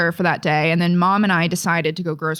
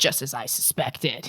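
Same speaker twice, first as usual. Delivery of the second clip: low, quiet, irritated smugness. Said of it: "he's, like, irritated".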